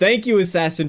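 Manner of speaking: plain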